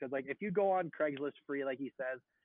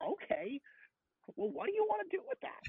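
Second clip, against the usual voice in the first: brash, pushed, very high pitch. Talking about TikTokers who nail this guy, a host does a Gary Vee impression. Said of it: "TikTok people who nail this guy".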